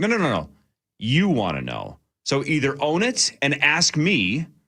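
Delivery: mock pissed-off, pointed, angry, slow, swooping delivery. Retelling an interviewer being told off: imitating angry Tom Cruise. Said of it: "Tom got really pissed".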